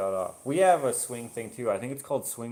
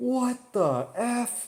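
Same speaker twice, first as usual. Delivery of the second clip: mock, loud, shrill, high-pitched startled yell; 13 semitones higher, 3 dB louder than usual. Telling about a ride stopping suddenly, the speaker acts out his shout: imitating a loud yell. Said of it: "he just yells out the F word really loud".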